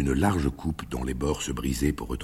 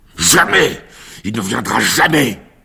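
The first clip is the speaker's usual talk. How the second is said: fearsome, very high, very loud shouted cry; 9 semitones higher, 14 dB louder than usual. Pilate suddenly cries out at Yeshua, who recoils: terrible shout. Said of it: "Cria soudain Pilate, d'une voix si terrible".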